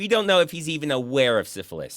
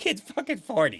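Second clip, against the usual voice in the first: worked-up, upset exasperation with swooping pitch; 7 semitones higher than usual. Recapping a Seagal movie plot to listeners, upset. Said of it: "I get upset when I think about".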